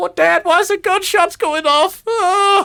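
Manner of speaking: very high-pitched, weepy, crying voice. Voicing the son who is there when the door opens: acted crying. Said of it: "he's actually crying".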